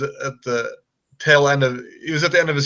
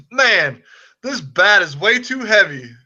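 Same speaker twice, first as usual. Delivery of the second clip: play-acted calling out, voice raised, high and swooping; 6 semitones higher, 3 dB louder than usual. Retelling Ken Griffey Jr. picking up the speaker's bat: imitating him raising his voice. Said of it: "kind of like raises his voice and says".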